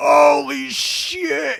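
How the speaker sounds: put-on very high, loud, freaked-out panicked yelp. Retelling a ride, imitating a guy's panicked shout from behind. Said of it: "Like almost like losing his shit".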